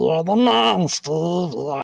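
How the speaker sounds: put-on monster voice. Imitating the hormone monster character Rick from Big Mouth: Rick voice. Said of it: "and he goes like".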